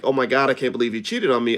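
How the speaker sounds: put-on, acted-out shocked disbelief. Speaker retelling a woman's reaction, acting out shocked disbelief. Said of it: "she was all shocked".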